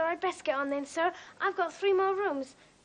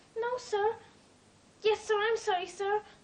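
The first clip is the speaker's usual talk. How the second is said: crying, tearful voice, pitched higher; 5 semitones higher than usual. Answering an employer who has found the speaker hiding: crying. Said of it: "you've been crying".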